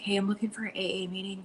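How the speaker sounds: high, hushed, discreet half-whisper. Retelling asking a receptionist for a meeting: imitating her own half-whisper. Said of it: "whisper it".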